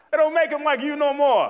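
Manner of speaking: put-on New York accent. Praising a woman, repeating the saying as a New Yorker would, New York accent. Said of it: "as a New Yorker would say".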